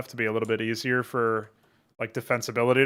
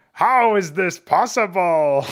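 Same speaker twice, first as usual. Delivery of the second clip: loud, slow, badly acted, hammy exclamation; 7 semitones higher, 7 dB louder than usual. Recalling own old poorly voice-acted line, zealot voice. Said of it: "it's my zealot voice, and I just go".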